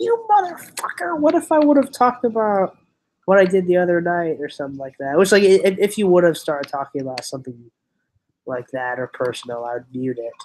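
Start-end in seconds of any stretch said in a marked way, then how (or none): 0.0-4.4 high, distant-sounding, squealing mock rage. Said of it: "it'd be like".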